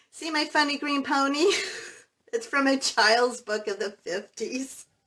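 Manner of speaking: talking through laughter. Showing a page from a child's book of the fifties, laughing while talking. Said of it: "I'm sorry for laughing".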